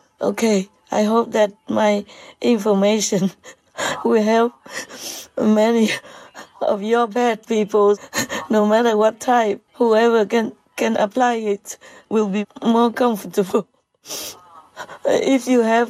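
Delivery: overly emotional, laughing through tears.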